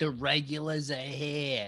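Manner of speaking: slow Boston drawl with every R dropped.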